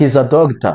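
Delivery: statement-like pitch fall on "doctor". Teaching statement versus question intonation in english: falling pitch on doctor. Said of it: "the intonation goes down".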